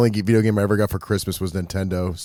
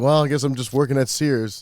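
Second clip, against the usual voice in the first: usual speaking voice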